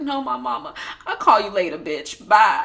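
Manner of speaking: put-on, upset, slow and dragging delivery. Speaker retells Heavenly answering while upset about her mom; imitating Heavenly upset. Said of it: "she was upset clearly because of her mom".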